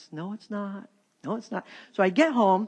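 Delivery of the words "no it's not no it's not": still, small voice, much quieter than before. Retelling his replies while the speaker yells in the car, in a still small voice. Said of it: "with that still small voice".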